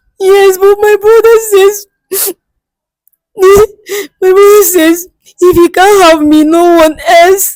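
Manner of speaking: sobbing through the words, very high and tearful. Being told to calm down, the speaker answers while crying. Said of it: "Stop crying".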